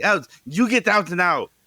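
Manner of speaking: put-on very high, angry, shouting, clumsy Russian accent. Retelling how a woman threw drunk men out with a broom, imitating Svetlana's Russian accent. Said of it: "she was going".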